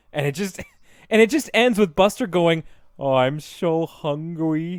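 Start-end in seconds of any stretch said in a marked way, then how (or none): 2.9-4.8 toothless-sounding speech, much slower. Retelling the ending of a sad book, Buster talking without teeth. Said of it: "he can't talk through his teeth anymore".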